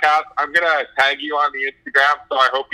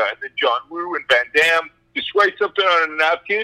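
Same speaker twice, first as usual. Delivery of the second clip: normal talking voice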